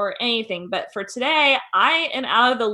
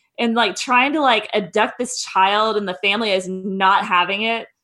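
ordinary talk, nothing marked

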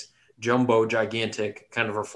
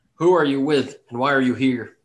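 loud, yelled shouting; 3 semitones higher, 7 dB louder than usual. Voicing the biggest gnome challenging the group; yelling. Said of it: "he yells out".

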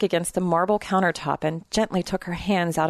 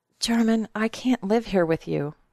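plain

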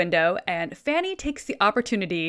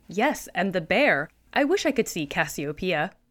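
normal talking voice

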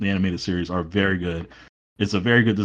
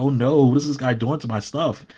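high, alarmed, shocked and frightened exclamation; 6 semitones higher than usual. Imitating Brainiac as Superman breaks up his plane: imitating Brainiac shocked and frightened. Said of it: "he was shocked and frightened".

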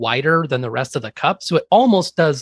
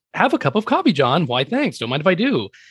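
lilting, higher-pitched voice; 3 semitones higher than usual. Asked how the comic line sounds, voicing it: higher lilt. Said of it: "a higher lilt to it".

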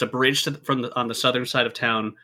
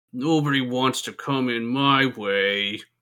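sorrowful, sad voice full of sighs. Narrating to players, voicing someone sighing under a bridge: sad voice. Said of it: "There's a sad voice under that bridge".

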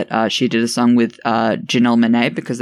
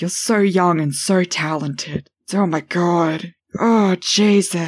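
very slow, high, very drawn-out cartoon voice; 7 semitones higher than usual. Host retelling what she says to young artists she brings on: Family Guy voice. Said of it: "you slipped into a fucking Family Guy voice".

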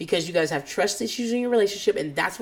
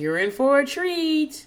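woman's voice, pitched up; 8 semitones higher, 4 dB louder than usual. Retelling what she said after skipping her antidepressant: imitating Renee's voice. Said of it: "she's saying in this voice".

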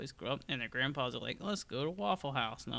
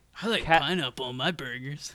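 put-on dumb surfer guy voice, louder; 9 dB louder than usual. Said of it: "my go-to voice for dumbass".

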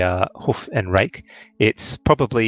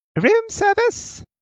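tiny woman's voice, very high-pitched. Narrating a knock at the door, doing a small little lady's voice. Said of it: "you can hear a small little lady go".

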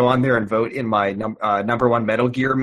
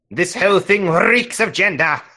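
rolled r in "reeks", pitched high; 8 semitones higher, 3 dB louder than usual. Requoting a line with a word that has an R to roll: Seventh Doctor rolled R. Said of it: "a word that has an R".

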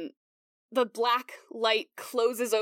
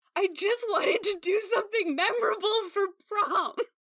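very high-pitched, sobbing voice, crying throughout; 10 semitones higher than usual. Voicing a sobbing character accusing another: sobbing. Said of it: "She is sobbing".

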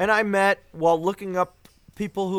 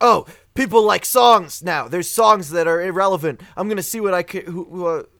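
ordinary delivery

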